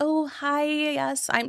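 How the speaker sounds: timid, mousy little voice, high and very drawn out. Showing how a timid self-introduction sounds: mousy timid voice. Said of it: "when we get a little mousy".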